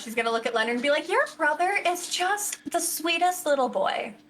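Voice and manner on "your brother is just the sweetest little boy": completely oblivious delivery. Voicing Alejandra praising Leonard's brother: oblivious Alejandra voice. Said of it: "being completely oblivious in Alejandra style".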